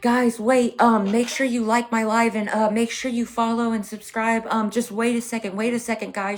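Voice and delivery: high, pleading, begging voice. A streamer retells how another streamer begged viewers leaving her live: imitating someone begging. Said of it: "she was begging".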